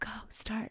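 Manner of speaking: hushed, breathy whisper.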